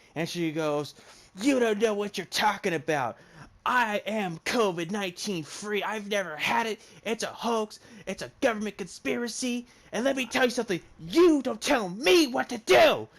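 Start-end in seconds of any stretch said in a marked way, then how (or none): 1.4-13.0 mock worked-up, high-pitched ranting tirade. Retelling a woman's tirade about a hoax: imitating a woman ranting. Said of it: "she is about to go on a tirade".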